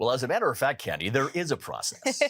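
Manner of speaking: animated, swooping on-air radio announcer voice. Speaker answering a question, putting on a radio voice. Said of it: "I just wanted to do my radio voice".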